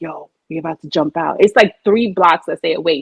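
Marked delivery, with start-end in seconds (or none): 0.0-1.4 imitated whisper. Retelling a friend's plan in the cab: imitating a whisper. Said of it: "And she's whispering, like".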